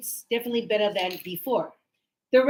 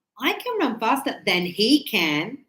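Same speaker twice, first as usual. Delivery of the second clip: heavy stress on the final words "he can". Showing where the focus of a sentence lies: emphasis on he can. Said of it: "listen to how I say".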